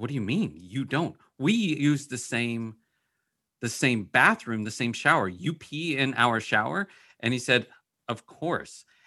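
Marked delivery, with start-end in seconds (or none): none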